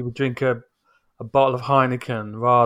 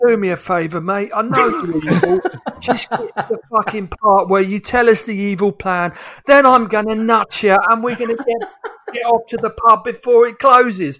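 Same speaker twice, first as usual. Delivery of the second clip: put-on cockney accent, very high and loud; 10 semitones higher, 7 dB louder than usual. Speaker launches into a bit about a villain, in a cockney accent. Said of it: "does his cockney bit".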